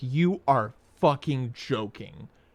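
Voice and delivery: seething, rage-filled, furious outburst of disbelief. Retelling finding an unmuted audio device: retelling own rage. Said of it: "The rage I felt seeing that".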